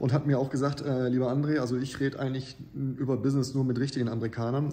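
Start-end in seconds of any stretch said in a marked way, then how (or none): none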